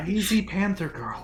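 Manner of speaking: soft, high, muttered half-whisper under the breath. Muttering in character about a companion who sleeps near a panther: half-whispering under breath.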